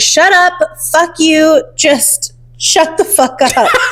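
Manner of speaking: furious man's voice. Retelling what someone shouted at a wedding, imitating an angry man's voice. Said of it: "a regular man's angry guy voice saying".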